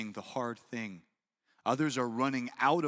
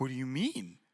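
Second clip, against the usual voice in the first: mock pouty, complaining little-kid voice. Retelling an argument about having candy for breakfast, mimicking her pouting. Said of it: "And she starts pouting".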